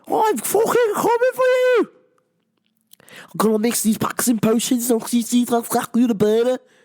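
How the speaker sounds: put-on Scouse Liverpool accent, best attempt. Calling out two people by name, in a put-on Liverpool accent. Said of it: "That's my best Liverpool accent".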